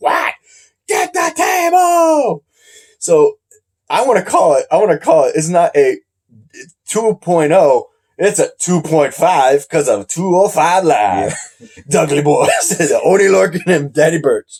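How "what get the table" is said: very high, slow voice, "table" drawn out. Retelling what one tag partner said to the other, use a high-pitched Oney Lorcan voice. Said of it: "he's got a high pitched voice".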